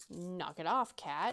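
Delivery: acted, put-on unkind tone. Recounting scolding the cat that lunged to bite a foot: retelling a not-nice voice. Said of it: "in a not nice voice".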